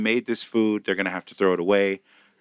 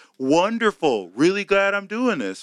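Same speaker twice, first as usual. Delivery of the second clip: mock annoyed, angry voice, higher pitch; 11 semitones higher than usual. Retelling what an irritated server said at a comedy show: imitating a mad server. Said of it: "one of the servers was mad".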